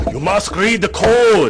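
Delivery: put-on Japanese accent, very high-pitched and swooping. Quoting a colleague who would jump up and down: imitating a Japanese accent. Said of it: "has a great accent".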